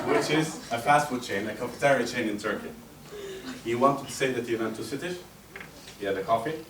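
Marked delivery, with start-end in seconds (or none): none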